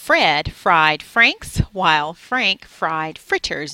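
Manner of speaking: slow, loud, careful enunciation of every word. Demonstrating a tongue twister as a voice warm-up for recording: slow careful enunciation. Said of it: "I was just trying to say it slowly and enunciate my words".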